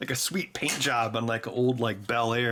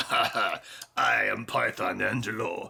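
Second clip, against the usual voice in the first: put-on slow, creaky villain voice with Eastern European accent; 3 semitones lower than usual. Retelling how an Eastern European man talked, in a Bond villain voice. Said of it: "he talked like a Bond villain".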